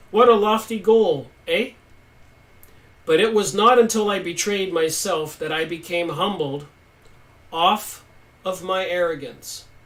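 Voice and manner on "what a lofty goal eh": a touch of Canadian accent. Repeating a quoted line aloud, in a slight canadian accent. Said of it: "A little Canadian accent".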